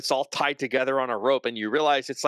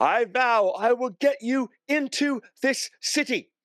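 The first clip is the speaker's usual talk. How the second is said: very high, raised voice; 10 semitones higher than usual. Acting out a woman who stands up at the city gate: raised voice. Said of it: "raise her voice".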